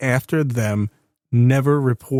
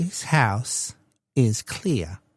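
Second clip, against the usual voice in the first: put-on little-lady voice, quieter; 5 dB quieter than usual. Talking about a cleared house, doing the little lady from Poltergeist. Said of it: "my impression of that, that little lady".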